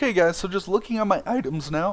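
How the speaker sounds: cracking, breaking voice, jumping up high. While going over items in a game video, the streamer's voice cracks. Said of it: "Oh my god, my voice cracked".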